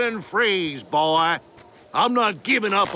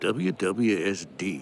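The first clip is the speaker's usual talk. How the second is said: low, very soft, slow muttering under the breath. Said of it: "What are you muttering?".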